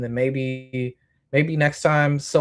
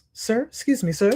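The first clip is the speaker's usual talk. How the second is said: high, overly courteous, super polite voice; 7 semitones higher than usual. Retelling trying to get an ignoring man's attention, imitating a super polite voice. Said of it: "Like super fucking nice, super polite".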